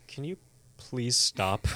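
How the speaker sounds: genuine quiet plea, not screaming. Retelling a captive victim's words to the captor: imitating a genuine plea, not screaming. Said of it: "she's not even, like, screaming".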